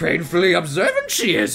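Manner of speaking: bad, put-on, swooping, sing-song wise-creature voice. Remarking on someone, the speaker does what they call their worst Yoda impression. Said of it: "my worst Yoda impression".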